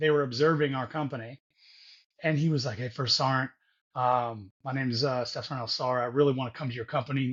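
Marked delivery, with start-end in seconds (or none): 2.8-7.3 stern, confident voice, lower pitch. Retelling how a student asked to join the company: imitating a stern, confident request. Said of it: "all stern and, and all confident".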